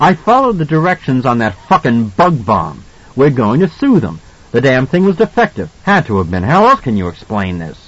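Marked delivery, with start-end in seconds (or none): none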